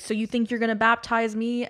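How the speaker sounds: acted-out scream. Retelling what he screamed during a car ride with his uncle, retelling a scream. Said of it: "And he's screaming".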